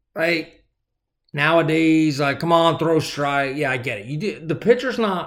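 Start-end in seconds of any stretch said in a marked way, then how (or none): none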